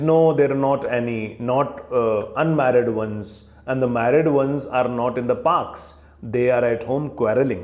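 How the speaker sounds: ordinary delivery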